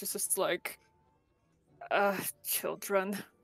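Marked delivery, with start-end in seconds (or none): 1.9-3.2 muttering quietly under the breath. Voicing Akasha's quiet remark about the others: muttering under the breath. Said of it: "Akasha just kind of mutters under her breath".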